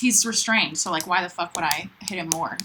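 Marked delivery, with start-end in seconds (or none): none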